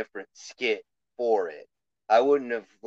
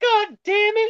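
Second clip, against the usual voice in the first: put-on worked-up shout, higher and louder; 5 dB louder than usual. Describing a podcast host getting hyped up: imitating Jim Cornette getting hyped up. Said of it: "he gets all hyped up".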